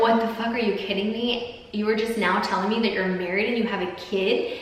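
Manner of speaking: normal talking voice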